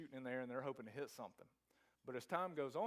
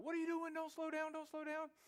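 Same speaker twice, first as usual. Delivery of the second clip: very high, shouted cry. Retelling how he yelled to Dave in the back seat as the aircraft slowed, retelling a yell. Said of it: "I yell to Dave".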